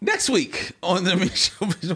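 announcer voice cracking and breaking mid-line. Announcing next week's episode of the michelle mission, voice cracking. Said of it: "Why did my voice crack?".

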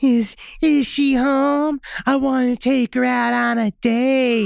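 very slow, high, creepy giggling voice. Retelling how a neighborhood boy rang the bell asking for her: imitating Ronnie's creepy giggling voice. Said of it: "ask in a creepy, giggling voice".

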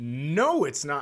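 acted scornful, repulsed, disgusted dismissive tone. Retelling a TV moment, imitating Letterman sounding disgusted.

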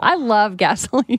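talking through laughter. Admitting a favorite smell to friends, laughing while talking. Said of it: "I can't even say it without laughing".

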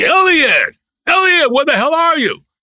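put-on, very high-pitched, shrieking screaming yell. Retelling how Stanley came in looking for him: imitating Stanley screaming. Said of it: "he's screaming".

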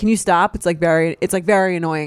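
ordinary talk

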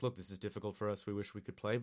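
calm, very quiet, low, hushed, sedate tone. Retelling how another guy comes on, imitating a more sedate guy. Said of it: "is a little more sedate".

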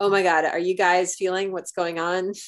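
usual speaking voice

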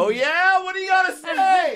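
mock loud delivery. Retelling a tense moment with a big trainer: retelling a loud reply. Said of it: "respond loud enough so that other people can come in".

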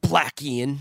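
spiteful, unloving, hostile, mean tone.

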